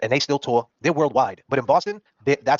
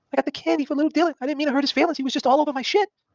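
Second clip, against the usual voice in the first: much higher, sheepish, embarrassed voice. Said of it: "He said".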